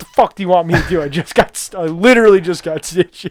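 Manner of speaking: high, mild, half-shouted yell. Retelling a hockey player just back from stitches, retelling a yell at the official. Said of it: "he's yelling at the official".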